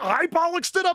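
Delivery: put-on very high, loud, affronted, indignant voice. Retelling her last retort in the argument: imitating increasingly indignant retort. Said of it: "as they get increasingly indignant".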